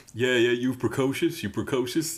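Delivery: put-on Cajun accent. Retelling a movie line with a faux Cajun accent: Steven Seagal faux Cajun accent. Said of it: "Seagal with his faux Cajun accent saying".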